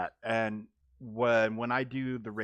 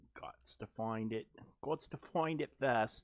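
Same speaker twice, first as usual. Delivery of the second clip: fake, put-on British accent; 5 dB quieter than usual. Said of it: "pardon my fake accent there".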